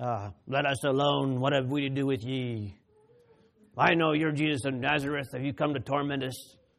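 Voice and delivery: strange, acted-out possessed voice. Preaching, imagining someone in church hopping up during a service: imitating a possessed person's strange voice. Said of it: "starts saying in a strange voice".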